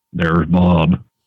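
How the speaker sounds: flat, low, drawn-out monotone drawl. Retelling a first meeting, imitating Chad's monotone drawl. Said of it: "how Chad has that monotone drawl".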